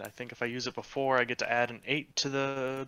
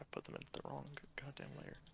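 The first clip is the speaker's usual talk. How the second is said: normal talking voice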